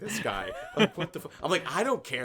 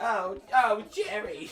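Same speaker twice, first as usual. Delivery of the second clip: put-on cute anime voice, higher; 9 semitones higher than usual. Acting out George as a cute anime character calling Jerry: George as a cute anime character. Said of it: "the cute fucking, like, anime character".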